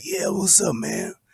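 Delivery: acted, breathy, groggy, just-woke-up half-asleep voice. Mimicking someone answering a call while asleep, imitating a sleepy middle-of-night voice. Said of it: "that two thirty in the morning voice".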